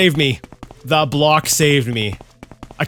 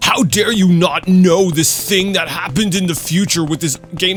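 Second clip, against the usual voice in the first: put-on condescending tone, higher pitch; 3 semitones higher than usual. Speaker describes how others talk down to them, mock-condescending tone. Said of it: "like a condescending tone".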